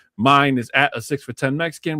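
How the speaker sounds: ordinary delivery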